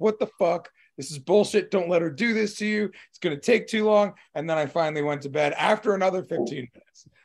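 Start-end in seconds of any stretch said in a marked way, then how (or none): 0.0-4.1 put-on shouting. Retelling a long wait, the speaker acts out retelling own yelling. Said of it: "I'm like yelling at everybody".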